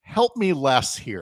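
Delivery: put-on, not-so-sweet voice with an annoyed tone. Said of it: "in a not so sweet voice".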